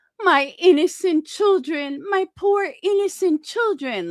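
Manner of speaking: mock lighthearted, high, weepy, tearful crying tone. Speaker retelling the tone he used about Chica, mock-crying like Brittany. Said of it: "I'm going to sit there and cry... That's what my tone was".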